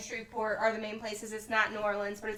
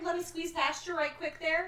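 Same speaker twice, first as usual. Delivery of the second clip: put-on Minnesotan accent; 7 semitones higher than usual. Joking about inviting other podcasters over: put-on Minnesotan accent. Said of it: "I can speak Minnesotan with ya".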